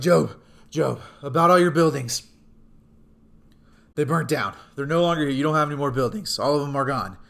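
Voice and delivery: loud, breathless, out-of-breath voice. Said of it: "And he's breathing heavy".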